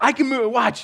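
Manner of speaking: high, excited little voice. Retelling a four-year-old daughter's claim about the moon: imitating Zoe's excited voice. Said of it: "She's super excited".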